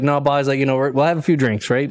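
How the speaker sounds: ordinary talk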